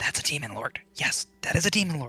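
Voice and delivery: whispered line in character voice. Voicing a hidden character who spots a demon lord: whispering in character. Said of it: "he is gonna whisper".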